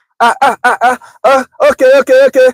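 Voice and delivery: high, halting stammer, fighting the words. Describing how a father sounds on the phone: imitating dad's stutter. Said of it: "he'd be fighting with the words".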